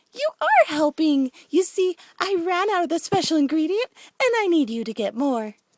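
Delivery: very loud giggling sing-song. Narrator reads Pinkie's line as she giggles even more, giggly Pinkie voice. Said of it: "Pinkie giggled even more".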